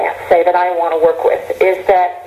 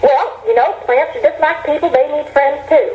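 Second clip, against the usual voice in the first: put-on strong Kentucky accent, granny voice, pitched higher; 8 semitones higher than usual. Quoting the speaker's grandmother answering the grandchild's question, in a Kentucky accent. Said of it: "in her very Kentucky accent".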